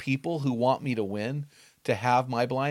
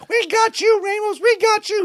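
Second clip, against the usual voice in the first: put-on very high, slow little-girl voice, screamed out; 8 dB louder than usual. Retelling being knocked down, the speaker imitates the opposing coach screaming: coach's girl voice. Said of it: "He had this girl voice".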